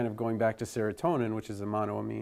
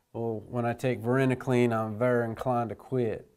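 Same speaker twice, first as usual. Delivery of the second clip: put-on Southern accent. Teaching drug names, speaker quotes a student in a put-on southern accent. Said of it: "said in a southern accent".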